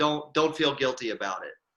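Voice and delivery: ordinary talk, nothing marked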